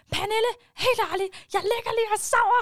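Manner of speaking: shrill, very high, loud shout. Woken at night with all electronics on, speaker calls to their cousin: retelling a shout. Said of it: "Så råbte jeg bare hende sådan".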